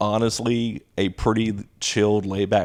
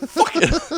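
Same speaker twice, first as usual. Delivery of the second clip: play-acted, very high, angry kid outburst. Speaker retells a short student yelling at them in class, imitating a kid yelling. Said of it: "So he's yelling at me".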